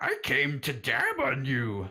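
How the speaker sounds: high, loud creature voice. Asked to talk in the voice, answering a greeting to Master Yoda, in Yoda voice. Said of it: "talk to him in the voice".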